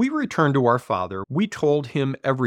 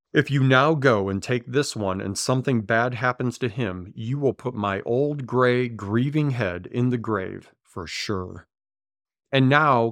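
plain

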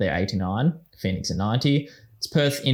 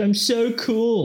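very high, squeaky, put-on childish kid voice; 12 semitones higher than usual. Speaker describes a cringe video message and a man in it, imitating a put-on kid's voice. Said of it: "He put on a kid's voice and he's like".

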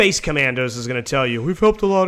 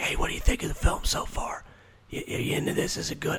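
put-on whisper, quieter. Retelling asking moviegoers questions during the film: imitating own whisper. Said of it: "I'm whispering into someone's ear".

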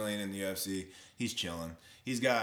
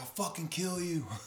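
high, furious, mock screaming; 8 semitones higher than usual. Telling someone how a fighter reacted, imitating someone screaming. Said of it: "he was screaming like".

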